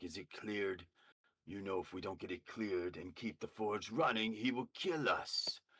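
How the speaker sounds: half-shouted call, mild yell rising upward. Game narrator voicing a man yelling up a flume, yelling. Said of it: "he's yelling up the flume".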